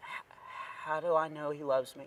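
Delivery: barely audible tiny voice, halting and stumbling. Retelling what a girl at the merch table asked: imitating the quietest voice. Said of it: "she said in the quietest voice I've ever heard".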